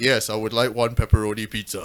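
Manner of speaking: forced, put-on, very deep low voice. Retelling phoning in a pizza order while trying to sound deeper: deliberately deepened voice. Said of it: "I would try and deepen my voice".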